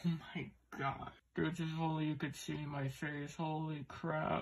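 speaking while choking back, stifling laughter. Reacting to a rare card pull, holding back laughter. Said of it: "I'm laughing so hard right now, but I'm trying to keep it down".

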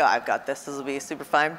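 usual speaking voice

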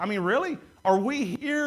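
a touch of dry, light sarcasm. Retelling Peter's answer to the people questioning him: imitating Peter's sarcasm. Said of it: "he's a little sarcastic at first".

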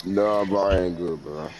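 low, sad, depressed voice. Answering when asked if you're good, sounding depressed. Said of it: "you sound depressed".

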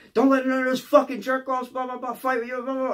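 very high, shrill, screaming tirade. Retelling a woman screaming at him over the phone; retelling someone screaming. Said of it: "she's screaming in the goddamn phone".

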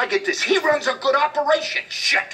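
very high-pitched, slow, furious angry rant. A man confronts Nick about how his guys talk about him, angry. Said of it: "Why are you so angry?".

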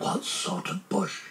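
soft, quiet whispered aside. Narrator reads a character's aside to his friend: whispered. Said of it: "whispered Pooh to Piglet".

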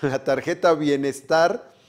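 laughing while speaking. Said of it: "perdón que me dio risa por lo de la tarjeta Bienestar".

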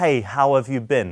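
loud voice. Demonstrating an opener to a woman in a group, said loudly. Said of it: "And I'll say that loudly".

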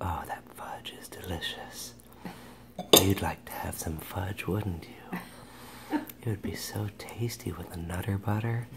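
hushed, very soft, very quiet, coaxing ASMR voice. Eating fudge and joking to viewers, doing some ASMR: mock ASMR voice. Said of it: "I'm gonna do some A S M R on you guys".

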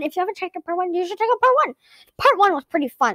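rushed, rattled-off fast talk. Streamer opening a game video to viewers, talking really fast. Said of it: "Sorry, I'm talking really fast".

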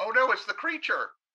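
unconvincing fright, high, loud. Reacting to a creature appearing, not sounding scared at all. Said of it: "you really don't sound very scared".

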